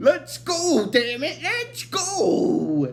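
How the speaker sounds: put-on high, slow, annoyed old professor voice. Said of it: "he's like".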